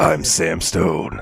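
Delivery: low, ridiculous, gruff voice. Praising that the character kept his cheesy look and voice: Sam Stone's gruff voice. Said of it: "he's still got this the same voice where he's like".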